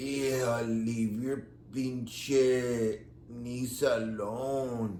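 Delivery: imitated dragging voice. Retelling voicemails from a man who left messages: imitating a dragging voice. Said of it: "his voice drags".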